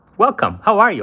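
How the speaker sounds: very high, cheery radio announcer voice. Host welcoming a guest to the live show, in a cheery radio voice. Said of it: "Do you like my radio voice?".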